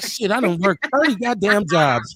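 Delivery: ordinary talk, nothing marked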